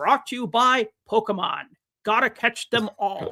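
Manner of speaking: stiff, stilted broadcast announcer delivery. Speaker recalling waiting for the broadcaster's sponsor line, imitating Kenny Albert's stilted delivery. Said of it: "kinda stilted delivery to be like".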